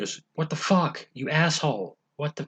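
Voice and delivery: put-on pissed-off voice. Retelling how she stopped playing silly demon Alexa for real, imitating someone pissed off. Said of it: "she's just been really pissed off".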